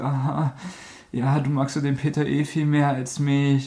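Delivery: slow, tearful, blubbering, weepy whine. Retelling how a guy in a film whined to the girl, imitating someone whining tearfully. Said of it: "hat dann angefangen so rumzuheulen".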